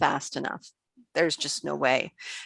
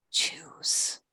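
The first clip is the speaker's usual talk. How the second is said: beautiful, soft, quiet hushed whisper. Voicing a second mysterious voice speaking to a player: quiet beautiful whisper. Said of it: "It's a beautiful voice, but it's quiet. It's a whisper".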